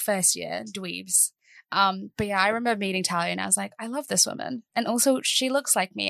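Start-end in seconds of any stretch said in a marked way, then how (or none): none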